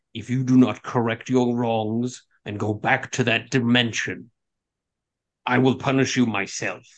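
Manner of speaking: icy, cold, wicked delivery. Voicing a Lich threatening a player to correct their wrongs: cold, wicked tone. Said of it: "with a cold wickedness and says".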